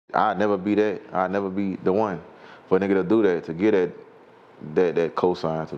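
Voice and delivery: ordinary talk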